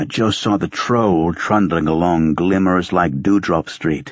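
plain

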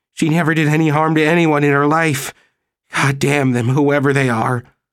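high, frenzied, frantic despairing voice. A man speaks of a missing old woman, in frenzy and despair. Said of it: "he said in frenzy and in despair".

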